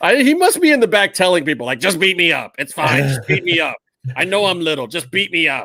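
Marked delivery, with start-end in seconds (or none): 1.8-5.7 overdone, exaggerated put-on small-person voice. Imitating a mini wrestler telling people backstage to beat him up: imitating a mini wrestler's voice. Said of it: "easy with the voice".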